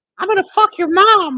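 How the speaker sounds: put-on very high, very loud, shrill screaming kid squeak. Describing a young player heard in an online game lobby, in a high-pitched kid voice. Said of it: "it's the high-pitched voice".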